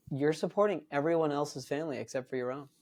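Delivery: normal talking voice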